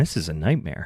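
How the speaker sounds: very low, mildly put-out, irked grumble. Retelling how the mayor reacted when a student was on fire, imitating mild annoyance. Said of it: "He says it like he got to Avis Rent-A-Car".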